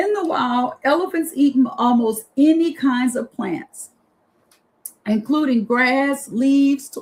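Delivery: choked-up, emotional, voice catching close to tears. Reading facts about elephants aloud, the speaker is choked up. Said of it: "I'm like choked up".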